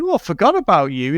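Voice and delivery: normal talking voice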